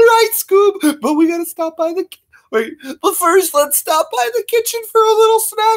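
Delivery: very high, pushed-up cartoon sidekick chatter. Doing Scooby-Doo impressions, the speaker voices Shaggy talking to Scooby in a Shaggy voice. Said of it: "there's Shaggy and Scooby".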